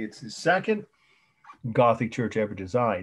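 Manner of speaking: stress on the word second. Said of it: "I'll say this and repeat it".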